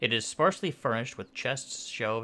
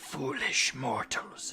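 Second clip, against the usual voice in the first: snarling, scornful spectral elf-like banshee voice; 3 semitones higher than usual. A storyteller voices a spectral elf confronting intruders, snarling. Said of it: "she snarls".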